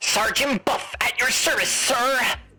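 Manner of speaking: filtered voice that sounds like a radio. Voicing a character who talks through a radio, in a Sergeant Buff radio voice. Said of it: "I'm gonna give him a radio voice this time".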